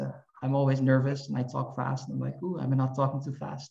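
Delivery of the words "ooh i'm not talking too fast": plain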